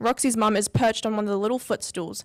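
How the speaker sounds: ordinary delivery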